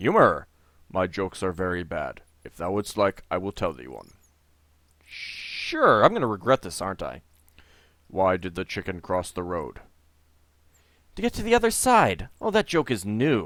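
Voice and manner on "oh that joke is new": dry, sarcastic, pretending to be impressed. Narrator voicing a character's reply after hearing a joke, sarcastic. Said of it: "he says sarcastically".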